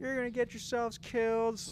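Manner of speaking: mock very high, angry, scolding scream. Retelling how the neighbors came outside: imitating neighbors screaming. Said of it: "fucking start screaming".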